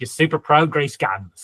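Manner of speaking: badly done, fake put-on Australian accent. Quoting a guy from a video on an Australian site: bad Australian accent. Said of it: "doing a bad Australian accent".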